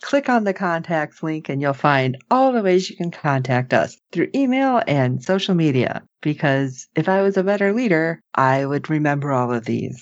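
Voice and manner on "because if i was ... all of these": put-on dark, sultry captain voice, much lower. A host tells fans how to contact the show, in a dark, sultry captain voice. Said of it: "In her dark and sultry voice".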